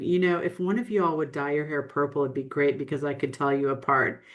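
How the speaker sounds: bone-dry, level, flat deadpan delivery. At a cocktail party, recounting a reply to a gentleman: retelling a deadpan remark. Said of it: "I looked at him deadpan".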